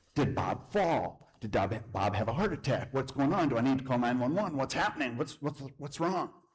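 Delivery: frantic, panicked, stumbling, tumbling delivery. Retelling opening the door to a neighbor who is bawling: retelling own panic. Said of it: "And I go into a panic".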